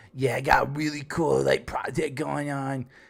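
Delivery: put-on smug voice. Retelling how Cyrax acts in his videos: smug imitation of Cyrax. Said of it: "he's all smug and he's on top of the world".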